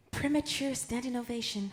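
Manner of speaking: high-pitched, glamorous screen siren starlet voice. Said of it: "I slipped into Marilyn then".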